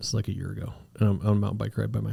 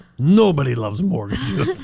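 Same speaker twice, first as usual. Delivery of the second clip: heavy, loud, thick put-on Eastern European accent; 7 semitones higher, 8 dB louder than usual. Retelling a woman's reaction to the speaker loving mortgages, thick Eastern European accent. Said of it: "really like thick, like almost like Eastern European accent".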